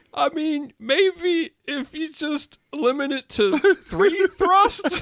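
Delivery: high, slow talk broken by laughing. Retelling what the studio director said while watching the scene: imitating Steve talking through laughter. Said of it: "like, through laughter, he goes".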